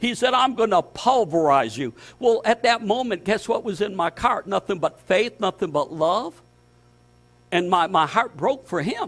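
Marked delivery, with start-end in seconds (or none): none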